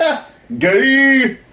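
very high pitch, drawn-out ending. Describing a reaction clip sent to friends: imitating Chang from Kenan. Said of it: "Chang from Kenan going".

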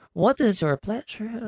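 high, put-on Mexican accent. Retelling a story, voicing the Chinese man he buys from: Mexican accent voice. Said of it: "that was like a Mexican voice".

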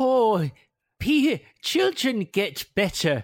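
put-on Irish accent. Recounting a scene, the speaker quotes Bertha in an Irish accent. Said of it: "goes with an Irish accent".

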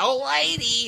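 high, loud, zany comic squealing voice.

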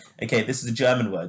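ordinary delivery

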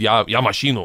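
flustered, caught-out, panicked blurt. Retelling what they blurted out in broken Russian: imitating own panicked blurt. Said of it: "I just panicked and said".

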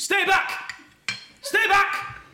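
repeated, very high, drawn-out yell. Recounting how a man kept shouting from the woods: retelling someone shouting. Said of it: "he just kept shouting".

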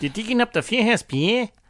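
put-on Australian-accented delivery. Podcaster acting out what a man's brother told him, in an australian accent. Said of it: "the Australian accent".

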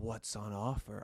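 flirty, suggestive tone. Storyteller demonstrating a tone they say they didn't use: suggestive tone. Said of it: "I didn't say it in the tone of voice like, mm".

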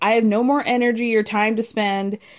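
ordinary talk

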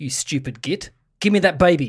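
mock-menacing put-on voice. Retelling what Liv said to the older brother once the parents left; imitating Liv sounding menacing. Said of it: "Liv said very menacingly".

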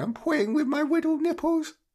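put-on very high-pitched baby voice. Imagining Jimmy Bullard in a halftime bit, Jimmy Bullard in baby voice. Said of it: "in a baby voice going".

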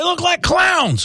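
very high-pitched impersonation voice. Doing a promised impression for the others: Jeff Cameron impersonation. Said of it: "my best Jeff Cameron impersonation".

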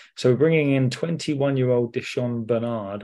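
ordinary delivery

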